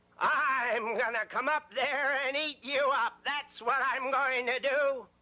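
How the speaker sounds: big menacing troll voice, drawn-out "I'm". Reading a billy goat story aloud, the narrator voices the troll under the bridge: troll voice. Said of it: "But under that bridge lived a big, ugly troll. / His eyes were as big and round as pie plates. And his nose was as long as a fireplace poker".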